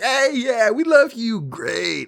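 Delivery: very high-pitched, drawn-out, fawning gushing friendliness. Retelling how the aliens try to win over Leia: imitating overly friendly Zeltrons. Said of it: "They're being all friendly and like".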